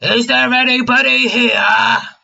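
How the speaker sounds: very high, rough, loud, drawn-out calling holler. Voicing a character calling out in an empty hall: loud holler. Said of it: "Krill lets out a loud holler".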